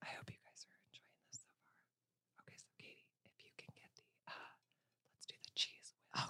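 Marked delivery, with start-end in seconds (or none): 0.1-1.7 soft ASMR voice, much quieter. A video host speaks to viewers, talking in a soft ASMR voice. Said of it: "talk in this ASMR voice".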